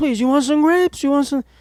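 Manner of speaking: very high, pushy, insistent, coaxing grandma voice. Retelling how a grandmother always urged food on guests: imitating grandma pushing food. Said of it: "She would try to force food down my throat".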